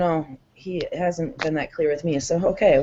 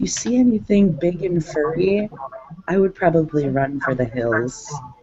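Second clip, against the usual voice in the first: very quiet, hushed voice. Voicing a character who leans forward with a warning: speaking very quietly. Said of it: "leaning over and very quietly saying".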